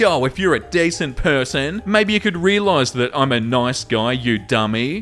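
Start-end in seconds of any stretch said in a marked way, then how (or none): none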